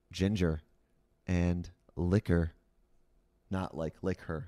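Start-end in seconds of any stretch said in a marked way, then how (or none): 0.1-2.5 mock low late-night radio voice, lower. Mock-announcing a late-night Twitch show: put-on low late-night voice. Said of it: "we'll use our low voices".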